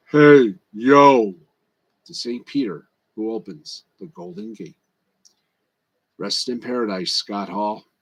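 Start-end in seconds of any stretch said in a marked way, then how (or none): 0.2-1.4 very loud, booming, belted-out voice. Voicing Scott Hall greeting Saint Peter at heaven's gates: deep voice. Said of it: "in a deep voice says".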